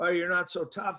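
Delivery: ordinary delivery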